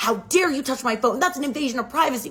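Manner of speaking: play-acted light, high, mild yell. Retelling a parent's reaction to a touched phone: imitating someone screaming. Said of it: "starts screaming at me".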